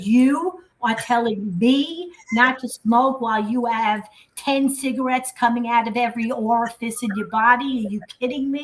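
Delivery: mock contemptuous, scornful, disdainful delivery. Retelling a retort to a mother who yelled: retelling a disdainful retort. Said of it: "I looked at her kind of with disdain and said".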